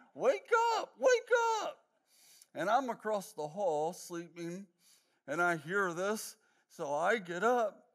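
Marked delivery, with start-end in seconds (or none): 0.2-1.8 panicked, very high-pitched, shrill, loud screaming. Retelling how mom woke dad on the floor: imitating mom screaming.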